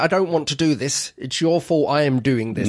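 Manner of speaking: ordinary talk, nothing marked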